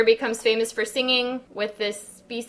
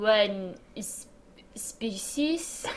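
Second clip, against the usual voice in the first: bad fake French accent, much quieter; 7 dB quieter than usual. Speaker reads a line as asked, in a bad French accent. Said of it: "bad French accent".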